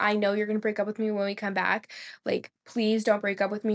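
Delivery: put-on hysterical crying. Retelling how her boyfriend woke her in the night; imitating hysterical crying. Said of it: "crying hysterically".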